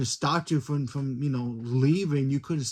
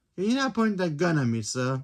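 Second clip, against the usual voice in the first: put-on British accent, robot voice; 3 semitones higher than usual. Retelling a robot's first words in a show, british accent. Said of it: "Kind of like in a British accent".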